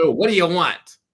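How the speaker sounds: put-on heavy New York accent, laid on thick, loud. Retelling how an older man answered the door, in a thick New York accent. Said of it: "he has really thick New York accent".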